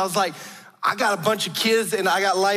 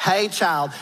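put-on Southern drawl, Southern belle accent. Trying to do her late grandmother's accent: grandmother's Southern belle accent. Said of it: "I'm gonna try to do her accent".

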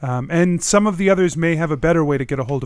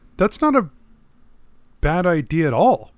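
super surprised, openly astonished tone; 2 semitones higher than usual. Reacting to the idea of a written contract, super surprised. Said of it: "you sound super surprised".

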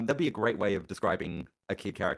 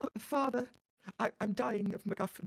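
put-on very high, sickly, ailing child voice; 13 semitones higher, 4 dB quieter than usual. Acting out the little sick Victorian boy: mock sick Victorian boy voice. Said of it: "the little sick Victorian boy".

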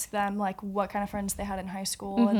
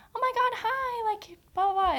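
very high, put-on, fake-friendly gushing voice; 13 semitones higher than usual. Describing how fake people greet you: imitating a fake high-pitched greeting. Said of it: "in the high-pitched voice".

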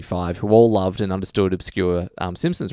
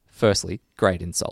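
usual speaking voice

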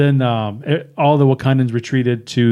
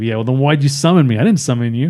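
ordinary talk

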